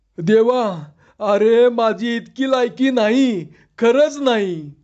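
trembling voice. Narrating a man who has sunk to the ground in shock, trembling voice. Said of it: "कापऱ्या आवाजात म्हणाला".

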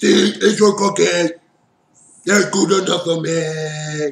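belted out, with the word "me" drawn out. On a game stream, trying out a Muppet impression, Cookie Monster voice. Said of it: "Like the [name]? Like the [name]?".

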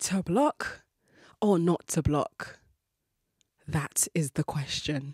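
slow, grand, theatrical Shakespearean stage-actor declamation. Posing a dilemma as dramatically as possible: grand shakespearean voice. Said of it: "I say that in the most Shakespearean voice that I can master".

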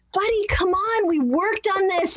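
put-on exasperated tone, voice climbing high. Showing how they talk in these moments, acting out an exasperated tone. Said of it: "I'll have the exasperated tone".

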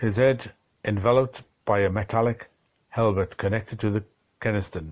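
plain

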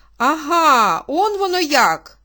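very slow, loud cry with Ага stretched out. Reading a novel, the mother hears when the next ball is: crying out. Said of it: "скрикнула її мати".

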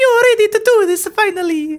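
put-on Italian-accented voice. Trying accents for a female character, settling on an Italian accent. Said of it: "Italian, there we go, Italian".

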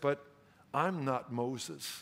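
mock despairing voice. Telling a story, quoting what she said; imitating a despairing voice. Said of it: "with a voice of despair".

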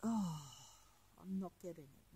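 quiet, breathless murmur, out of breath.

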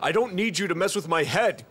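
plain

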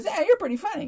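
very high, put-on comic voice. Retelling what the headliner said backstage after your set, Jay Leno impression. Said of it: "that's my best impersonation of Jay Leno".

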